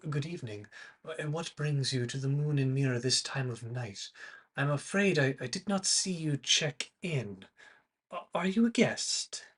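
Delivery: very soft, hushed, softly spoken voice. Voicing an Eladrin man hurrying over to visitors at night: very soft voice. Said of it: "his very soft voice".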